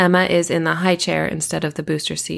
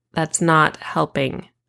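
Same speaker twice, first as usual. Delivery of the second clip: flat, expressionless deadpan, slower. First-person narrator answering Kara, who pats their back, deadpan.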